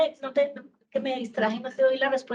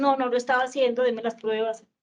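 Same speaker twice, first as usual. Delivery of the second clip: normal talking voice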